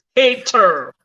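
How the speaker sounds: forceful, emphatic stress on hater. Pronouncing one word very clearly: strong emphatic stress on 'hater'. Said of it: "I'm gonna pronounce it very well. Emphatic stress".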